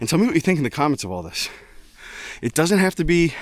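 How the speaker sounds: out of breath. Host asking viewers to like, subscribe and comment, out of breath. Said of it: "I'm winded".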